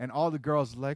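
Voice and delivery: ordinary talk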